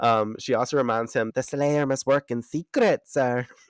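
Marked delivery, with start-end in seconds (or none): 1.3-3.4 put-on, high, Irish-sounding accent. Quoting a character reminding him of a rule: imitating Kendra with Irish-sounding accent. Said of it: "I sound like an Irish person".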